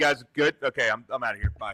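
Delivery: casual, offhand, relaxed delivery. Retelling how a friend leaves while people are still in the ring: imitating Mike leaving. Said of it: "and he's just like".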